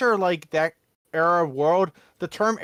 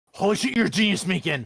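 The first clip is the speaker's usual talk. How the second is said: put-on, mock drunk college frat boy voice. Imitating Ace drunk, messaging at three in the morning: imitating a frat boy drunk. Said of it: "that kind of drunk".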